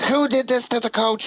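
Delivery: very high, silly, goofy put-on French accent. Retelling what Terry asked when he came in, in a goofy French accent. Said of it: "this goofy French accent".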